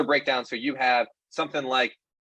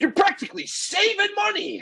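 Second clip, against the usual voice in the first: very high-pitched, excited TV pitchman hype. Picturing the other speaker selling membership: ShamWow guy voice. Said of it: "the sham wow guy going".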